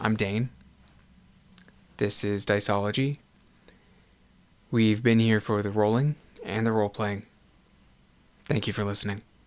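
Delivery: choked up, holding back tears. Signing off after thanking listeners, holding back tears. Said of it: "I'm doing my best not to cry here".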